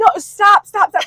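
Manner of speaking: put-on screamed yelling, repeated. Retelling a gas station worker jumping in front of the car: imitating a man screaming.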